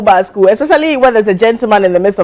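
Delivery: normal talking voice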